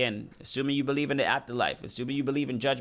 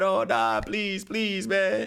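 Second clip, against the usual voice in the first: mock, very slow, high, drawn-out sobbing; 7 semitones higher than usual. Mocking criminals facing a judge, imitating someone crying. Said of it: "they start crying".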